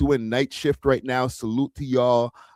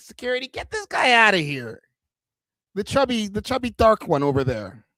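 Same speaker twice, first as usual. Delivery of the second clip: mad, light, trebly, pitched-up voice; 9 semitones higher than usual. Acting out how a man called security back then, imitating his very light voice. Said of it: "man's voice was mad light".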